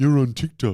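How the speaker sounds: loud, angry, mad-sounding voice. Imitating people commenting about being on TikTok: imitating a commenter's mad voice. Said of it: "I love this voice, mad voice".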